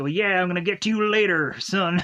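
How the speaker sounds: put-on hillbilly-like voice. Retelling how Calden talks to his kid: hillbilly-like Calden voice. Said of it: "in a very hillbilly-like way".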